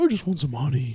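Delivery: cartoon bear character voice. Speaker repeats a line while doing Winnie the Pooh; Winnie the Pooh voice. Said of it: "that's him".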